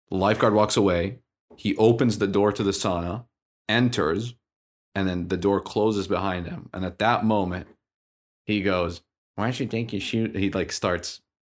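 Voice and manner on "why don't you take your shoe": acted mocking, taunting tone. Retelling how a man in a sauna mocked the lifeguard: imitating someone mocking. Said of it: "starts, like, mocking the lifeguard".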